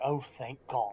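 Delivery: under-the-breath mutter. A listener reacts to the council leader's thanks, muttering below her breath. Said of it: "Kind of a little bit below her breath".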